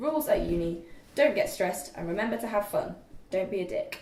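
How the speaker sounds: plain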